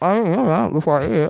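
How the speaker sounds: mumbled, chewing through a mouthful while talking. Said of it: "your chewing is driving me nuts".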